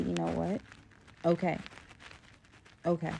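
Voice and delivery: ordinary talk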